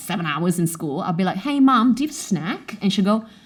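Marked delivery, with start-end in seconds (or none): 1.4-2.8 put-on everyday Australian accent, pitched up. Retelling coming home from school and asking mom something, in an Australian accent. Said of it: "the Aussie accent is still there".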